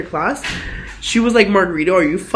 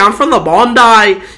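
slow, drawling put-on Australian accent; 8 dB louder than usual. Retelling how a guy from Australia said the name: imitating an Australian accent. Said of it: "that fucking accent".

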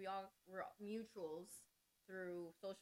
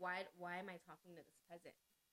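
ordinary talk, nothing marked

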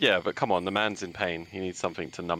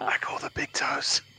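hushed, whispered voice. Answering a whispered remark during a game, whispering. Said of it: "I whisper".

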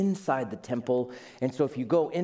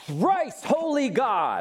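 swooping, pitched-up, used-car salesman radio announcer voice; 8 semitones higher, 3 dB louder than usual. Retelling how a pastor began his prayer, in a radio-announcer salesman voice. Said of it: "almost with a radio voice and a used car salesman".

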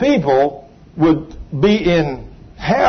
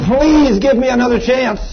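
re-enacted screaming, begging, much higher pitch; 7 semitones higher than usual. Recounting a suffering woman begging Him, acting out her screaming plea. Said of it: "she's screaming".

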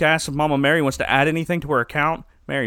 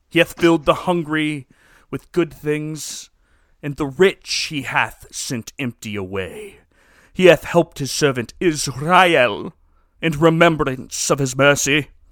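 put-on Middle Eastern accent; 3 dB louder than usual. Reading Mary's lines from a show aloud: put-on Middle Eastern accent. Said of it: "I was trying to do a Middle Eastern accent".

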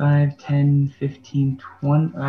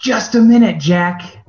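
booming, loud, drawn-out high yell in a character voice; 6 semitones higher, 7 dB louder than usual. Playing a character who calls to jack through open doors: yelling in character. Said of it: "And I'm gonna yell".

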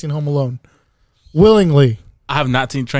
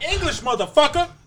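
put-on angry shout; 14 semitones higher, 4 dB quieter than usual. Quoting a movie line about Pulp Fiction: Samuel L. Jackson voice. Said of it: "Samuel L. Jackson".

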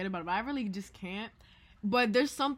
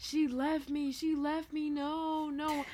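put-on childlike sobbing, higher; 6 semitones higher than usual. Telling a story about a young cousin, imitating a crying child. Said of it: "Rocco C is crying".

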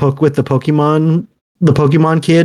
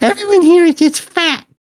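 put-on very high, squeaky kid voice; 14 semitones higher than usual. Retelling what a kid on Xbox said to his older sister: squeaker Xbox kid voice. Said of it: "stereotypical like squeaker voice on Xbox".

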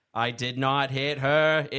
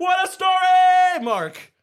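belted out, high and booming; 9 dB louder than usual. Acting a movie scene as Terry Crews in the Old Spice commercials. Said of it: "Like in the Old Spice commercials".

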